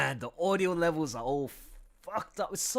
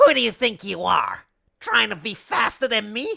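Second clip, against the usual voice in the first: loud cartoon hawk character voice; 3 semitones higher, 6 dB louder than usual. Asked about an old character voice, the speaker does the Jet the Hawk voice. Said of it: "I haven't voiced Jet".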